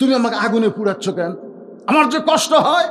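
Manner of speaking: high, loud, anguished cry of pain.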